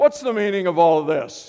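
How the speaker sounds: put-on loud booming stern-teacher bellow. Speaker retelling a teacher confronting mischievous students: bellowing like a teacher. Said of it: "bellows out".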